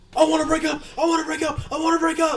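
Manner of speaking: very high, frantic, terrified, repeated yelling. Describing a video of a couple breaking up on a ride, retelling the man's terrified yelling. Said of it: "And he's just yelling at her".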